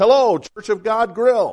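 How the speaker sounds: sunny, friendly cheery voice. A storyteller acts out a man answering the phone at a church, imitating a cheery voice. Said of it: "answered with a cheery voice".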